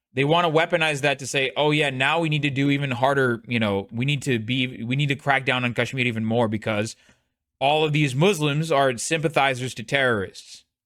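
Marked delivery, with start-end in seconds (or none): none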